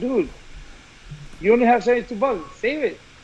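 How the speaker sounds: ordinary delivery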